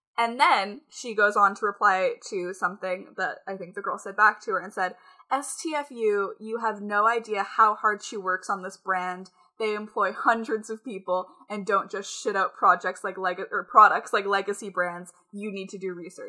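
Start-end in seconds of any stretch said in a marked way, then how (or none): none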